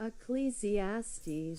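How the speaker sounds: slowed pronunciation. Asked to say a hard word slower, saying it again, said slower. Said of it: "Say it slower".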